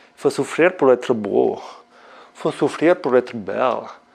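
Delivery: French spoken with a put-on German accent. Calling out cues during a workout set, in a german accent. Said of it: "C'est l'accent allemand que j'ai fait là".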